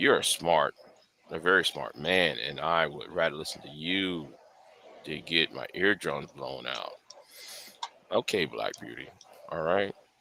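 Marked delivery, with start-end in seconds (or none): 8.1-9.9 toned-down, very quiet, low, calm voice. After being asked to stop yelling, answering in a lower, calmer tone. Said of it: "I hope hope this voice sa- satisfies you".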